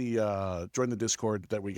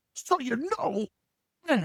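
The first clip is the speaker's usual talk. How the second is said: put-on loud obnoxious guy voice, higher; 14 semitones higher than usual. Imitating the Papa John's dude who always talks about pizza: imitating a loud obnoxious Papa John's guy. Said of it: "really loud and obnoxious".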